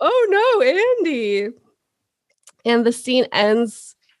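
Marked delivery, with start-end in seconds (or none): 0.0-1.5 very high, feigned astonishment. Retelling a tv scene where a character feigns surprise to andy; faking surprise. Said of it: "Tries to act surprised".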